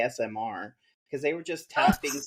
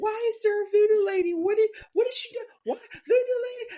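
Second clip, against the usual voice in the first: acted, very high, gasping, hyperventilating panic; 4 dB louder than usual. Retelling how a friend panicked at a shape in the dark: imitating someone hyperventilating. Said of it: "she starts, like, like, hyperventilating".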